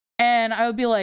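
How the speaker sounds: ordinary talk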